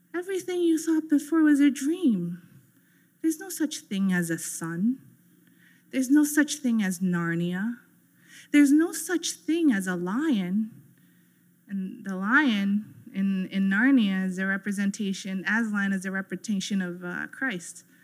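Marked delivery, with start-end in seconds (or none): 0.1-10.7 calm, hypnotic, soothing, lulling, coaxing voice. Retelling a story scene where she strums a mandolin, imitating a soothing voice. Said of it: "she just starts talking in this soothing voice".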